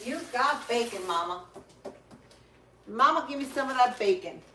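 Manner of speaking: high-pitched talking voice for a pet dog. Voicing the dog, who smells bacon cooking: voicing Lucy the dog. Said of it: "She says".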